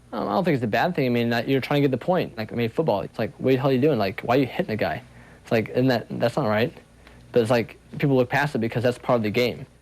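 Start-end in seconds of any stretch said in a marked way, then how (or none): none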